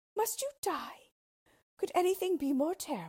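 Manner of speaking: exclaiming, crying out, pitched very high. The princess answers the unhappy king, crying out. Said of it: "cried the princess".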